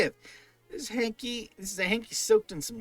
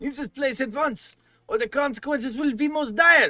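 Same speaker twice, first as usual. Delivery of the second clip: put-on, not-quite-Romanian vampire-style accent; 2 semitones higher than usual. A vampire, having just admitted it, warns the other person: not quite Romanian accent. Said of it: "your not quite Romanian accent".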